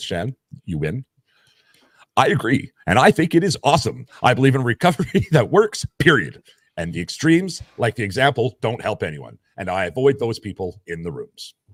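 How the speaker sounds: on-air radio announcer voice. Reading out a comment someone sent in, in a radio voice. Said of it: "says in in the radio voice".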